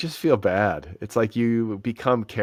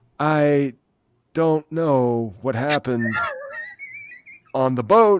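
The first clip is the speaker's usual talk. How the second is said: bad, swooping delivery, rising high, dragged out; 6 semitones higher, 4 dB louder than usual. Asked to do a bad impression on purpose: Christopher Walken impression. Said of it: "I wish so badly that I could do like an excellent Christopher Walken impression".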